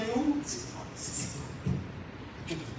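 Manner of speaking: timid little whisper.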